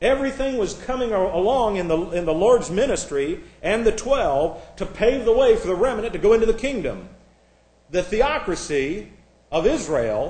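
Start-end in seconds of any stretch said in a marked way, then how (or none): 7.9-10.3 sarcastic tone, slow and drawn out. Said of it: "and I say that sarcastically".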